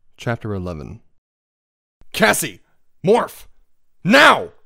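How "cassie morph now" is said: snapped, very high and very loud. As a police car approaches, urging a companion to morph: snapping. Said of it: "I snapped".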